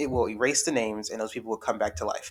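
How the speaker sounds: ordinary delivery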